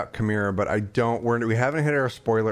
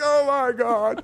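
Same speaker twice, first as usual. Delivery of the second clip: high, slow, stretched-out starstruck gasp. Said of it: "I was just like".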